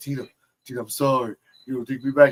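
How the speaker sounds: put-on sad, pleading voice. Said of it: "He was all sad".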